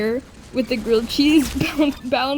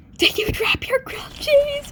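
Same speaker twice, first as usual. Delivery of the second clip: very high-pitched, hushed whisper; 14 semitones higher than usual. Retelling a campfire story, quoting what another girl whispered: retelling a whisper. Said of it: "she whispers".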